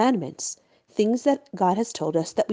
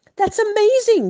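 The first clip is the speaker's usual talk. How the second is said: very high, loud, stunned, astonished outburst; 12 semitones higher, 6 dB louder than usual. The prince reacts as the Maharal solves his riddle; exclaiming in astonishment. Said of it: "the prince exclaimed".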